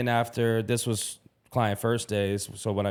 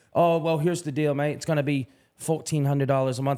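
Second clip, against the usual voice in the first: very bad, clumsy put-on English accent; 4 semitones higher than usual. Retelling what an old english manager said about the price, in a bad english accent. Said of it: "I know that's probably a very bad accent".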